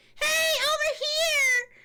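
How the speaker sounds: put-on very high, shrill, loud girl's voice. Retelling a favorite scene, imitating a girl's voice. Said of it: "The girl's voice, the actor's voice".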